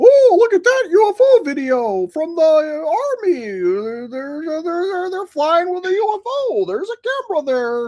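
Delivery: very high, squeaky, swooping mocking cartoon voice, "army" stretched. Mocking people excited about an army UFO video, in a Mickey Mouse voice. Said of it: "sound like you're doing a Mickey Mouse impression".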